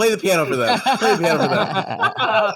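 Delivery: high, loud yell through laughter. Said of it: "I'm yelling at my boyfriend".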